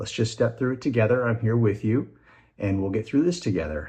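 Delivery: gentle, soft, quick, reassuring encouragement. Describing how the speaker's wife helps their son through fear, imitating her: soft, encouraging voice. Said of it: "a soft, encouraging voice".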